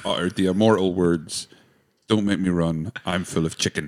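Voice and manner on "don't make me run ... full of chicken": ordinary delivery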